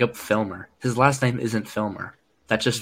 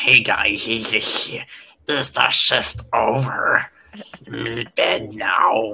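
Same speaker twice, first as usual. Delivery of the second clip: very slow, drawn-out cave-creature voice. Joking about working below deck on aircraft carriers, doing a Gollum voice. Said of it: "I'm gonna look like Gollum from Lord of the Rings".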